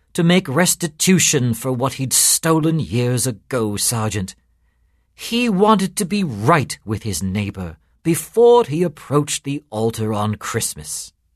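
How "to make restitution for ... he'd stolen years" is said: ordinary delivery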